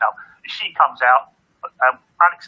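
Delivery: plain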